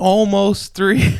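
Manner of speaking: high, loud, slow yell from a distance.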